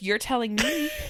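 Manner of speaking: put-on sassy voice assistant voice. Retelling what the watch said back: imitating sassy Siri. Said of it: "your watch is so sassy".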